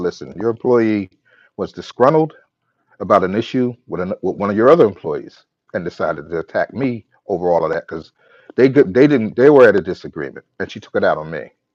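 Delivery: ordinary delivery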